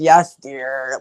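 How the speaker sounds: fed-up, annoyed, dismissive brushing-off tone. Acting out how a phrase never sounds loving, mock-annoyed and dismissive. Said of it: "he sounds annoyed every time he says that".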